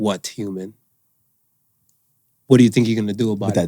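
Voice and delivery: low, dismissive, talking cat voice. Joking about cats ignoring their owners, voicing a cat. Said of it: "Cat's like".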